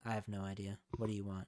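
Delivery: low, quiet, expressionless deadpan. Retelling a bartender's answer to a request for advice: imitating a deadpan reply. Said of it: "straight face and said".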